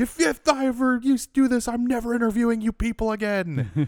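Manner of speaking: mock very high, loud, furious screaming rant. Recounting an interview where four men scream at each other, a host acts out Gene Okerlund: screaming Gene Okerlund impression. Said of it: "He's just screaming like".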